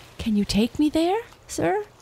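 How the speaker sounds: very high, hopeful, eager, rising high. Narrator reads Astrid addressing the East Wind, eager question. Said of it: "Astrid asked eagerly".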